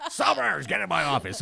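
mock rough, raspy voice. Retelling how the station founder greeted staff: imitating a boss's gravelly voice. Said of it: "he had that gravelly voice and had everybody on edge".

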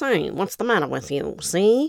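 put-on classic early-talkie old Hollywood movie character voice. Introducing a channel about old Hollywood, old Hollywood movie voice. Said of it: "characters would talk like this".

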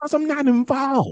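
sudden outburst. Retelling why a man skipped a show, acting out his reply; retelling Dennis's big outburst. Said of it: "that's his big outburst".

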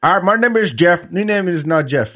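bad, terrible put-on Indian accent. Imitating the people who practiced on old people, in a terrible indian accent. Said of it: "That was a terrible Indian accent".

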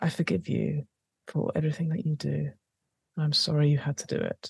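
soft whisper. Player describing their character's move to calm a foe, whispering in their ear. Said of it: "I'm just going to whisper to them in their ear".

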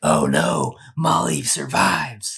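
very drawn-out, slow, swooping, dismayed, upset voice. Acting out a viewer who has already seen the movie, play a mock-upset viewer sounding like Batman. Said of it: "That was your good Batman impression".

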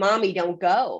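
put-on crying child voice. A mother retells her three-year-old's plea at her suitcase, imitating a crying child.

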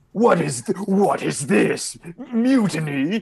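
put-on shouted character voice. Voicing a character who shouts in his best Darjan voice. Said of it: "will kind of shout in his best Darjan".

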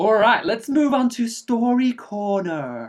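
put-on camp Welsh accent, very high, very slow. Host moving the episode on to the story corner segment, in a camp welsh voice. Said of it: "I've gone back to the sort of Camp Welsh voice".

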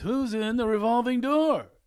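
very high, loud, rising voice. Retelling how a friend teases about assistants: Seinfeld impression. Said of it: "He says it like Seinfeld".

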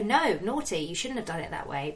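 plain

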